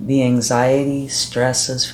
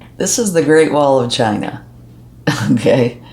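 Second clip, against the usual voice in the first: loud, giggly, laughing through the words; 7 dB louder than usual. Closing things out with the charm and naming it, giggling. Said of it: "I'm sorry I'm giggling".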